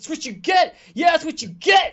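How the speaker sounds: very high, very loud, gloating, jeering shout. Narrating a game scene, voicing a man attacking a homeless man; shouting. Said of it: "He just shouts like".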